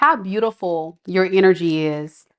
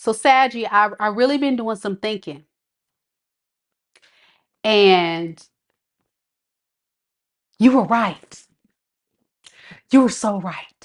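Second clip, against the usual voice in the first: holding back a laugh; 2 semitones higher than usual. A tarot reader voices what someone will say, holding back a laugh. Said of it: "I try not to laugh".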